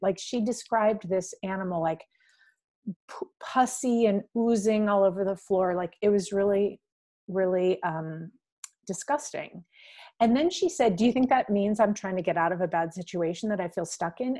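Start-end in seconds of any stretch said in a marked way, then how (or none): none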